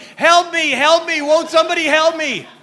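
very loud, high-pitched shouting cry. Telling a joke about a gorilla in a lion's cage: imitating a shout for help. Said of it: "the gorilla started shouting".

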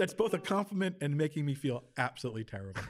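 ordinary delivery

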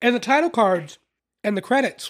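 speaking while chewing, mouth full. Discussing a musical film's opening credits, the speaker talks while chewing. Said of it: "Sorry, I'm chewing".

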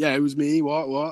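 brash, cocky, swaggering show-off boasting. Retelling a schoolmate owning up to a teacher: imitating a cocky swagger. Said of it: "Shagger Big Swagger over here walks".

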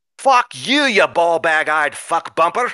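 deliberately bad put-on Scottish accent. Reading out Scots' insulting tweets to then-President Trump, in a bad Scottish accent. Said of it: "I have to get my bad Scottish accent back".

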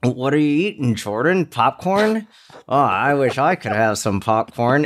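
mock voice spoken through clenched, gritted teeth. Retelling what Mike said to the speaker eating popcorn: imitating Mike through gritted teeth. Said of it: "Mike just grits his teeth".

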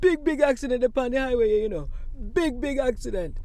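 put-on high, loud Jamaican accent.

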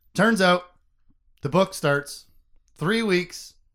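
weird stop-start phrasing, halting, with gaps. Summarizing how a book opens to another speaker: weird spacing and cadence. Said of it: "I'm doing this weird spacing and cadence".

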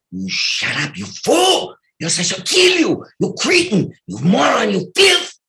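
very high, shrill, wildly sing-song, swooping cartoon voice. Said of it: "both voices".

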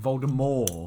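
very loud, name given a French pronunciation. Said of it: "this French pronunciation".

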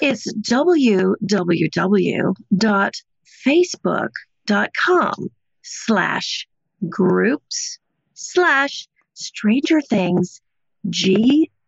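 read out really slowly. Rereading a Facebook group address that was hard to understand: reading really slowly. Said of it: "let's read that really slowly".

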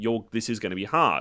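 ordinary delivery

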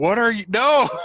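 very high, shrill, loud screaming outburst. Imitating how a friend would react to the news: imitating Chris screaming. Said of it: "He'd be screaming".

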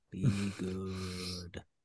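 very low, very soft, very quiet alien creature voice. Quoting E.T. to friends while talking about horror movies, do an E.T. voice. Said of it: "That was an excellent E.T".

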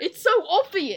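speaking through laughter. Teasing a quiz contestant who can't find the answer, laughing while talking. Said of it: "I can't stop laughing that you haven't got this".

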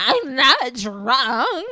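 put-on very loud, insistent, drunk voice, words stretched out. Teasing a friend about nights out, imitating drunk Jolene. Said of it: "You have a drunk voice too".

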